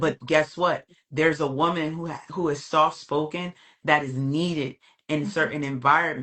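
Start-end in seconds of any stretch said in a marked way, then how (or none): none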